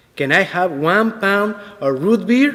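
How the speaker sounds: put-on strong, thick Spanish accent. Retelling a young man ordering at a deli counter: imitating a strong Spanish accent. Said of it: "said in his strong Spanish accent".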